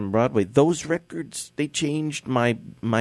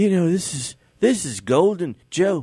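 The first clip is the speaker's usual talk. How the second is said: put-on English accent, pitched up; 7 semitones higher, 3 dB louder than usual. Retelling what Steve said about the photo: English accent imitating Steve. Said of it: "I'm just trying to be English".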